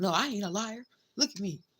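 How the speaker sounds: acted, dead-serious grown man voice. Acting out how the ex will act, imitating a man acting serious. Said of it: "now he wants to be all serious and act like".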